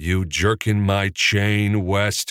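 menacing, lethal tone. Capra answers west's interjection in a deadly voice. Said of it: "Capra said in a deadly voice".

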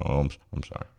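soft, dejected, deflated, sorry-sounding voice.

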